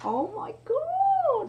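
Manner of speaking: high, slow, drawn-out shocked cry.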